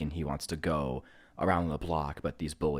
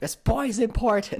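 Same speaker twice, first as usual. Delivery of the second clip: piercing, very high, loud shout; 5 dB louder than usual. Retelling a movie scene where Gordon Cole phones Coop: imitating Gordon Cole shouting. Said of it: "he's, like, shouting it".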